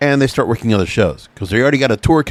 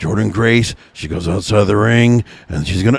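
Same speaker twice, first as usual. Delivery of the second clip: put-on droning commentator voice, lower pitch; 3 semitones lower than usual. Imitating a wrestling commentator calling a match: droning Matt Stryker impression. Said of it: "it gets droning after a while".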